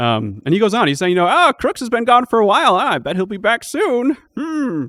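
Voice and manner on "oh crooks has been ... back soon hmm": put-on elderly man rambling, pitched high. Speaker quotes the character Ramblin Bill going on, in a rambling old man voice. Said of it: "rambling old man voice".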